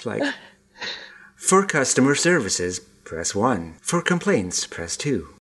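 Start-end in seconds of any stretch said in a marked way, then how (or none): 1.4-5.2 automated, recorded phone-menu voice. Joking about how Rhea reads the closing: American phone menu voice. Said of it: "on hold with an American company".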